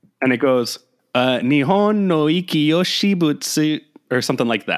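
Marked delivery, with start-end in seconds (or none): 1.4-3.8 very slow, robotic computer-voice reading. Reading a Japanese name as copied into a translator: Google Translate voice imitation. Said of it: "I did my best imitation of what this, uh, Google Translate voice just said".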